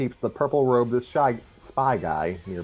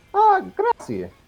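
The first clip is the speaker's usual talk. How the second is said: loud, very high-pitched character voice; 5 dB louder than usual. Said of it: "nodded Mario".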